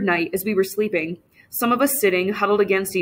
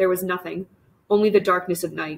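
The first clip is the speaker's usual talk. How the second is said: usual speaking voice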